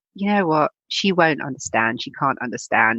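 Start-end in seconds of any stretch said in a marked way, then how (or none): none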